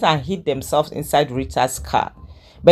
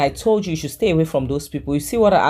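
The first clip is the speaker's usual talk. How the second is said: usual speaking voice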